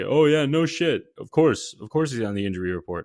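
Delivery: snarky, sarcastic delivery. Imitating what many listeners are probably saying: imitating a sarcastic listener. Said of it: "guy who is talking sarcastically to me".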